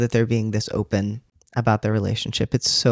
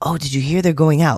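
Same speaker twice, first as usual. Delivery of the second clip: cheerful, bright, high-pitched gossipy tone; 5 semitones higher, 5 dB louder than usual. Describing how passers-by in the comics talk about the couple, retelling in a bright tone. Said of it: "[bright tone]".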